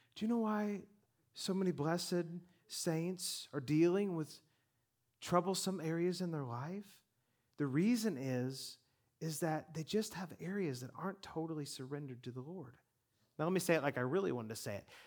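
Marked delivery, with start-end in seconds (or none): 0.1-12.7 very pastoral, tactful, diplomatic preaching tone, softened. Speaker rephrases his point to listeners: very pastoral manner. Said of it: "let me say this in a very pastoral manner".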